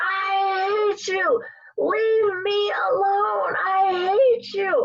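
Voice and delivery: shrill, very slow, top-of-lungs scream. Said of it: "my mom screams at the top of her lungs".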